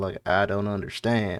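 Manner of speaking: bad, fake, put-on southern drawl. Showing how a character's line should sound, in a bad southern drawl. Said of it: "it should be more of a southern drawl".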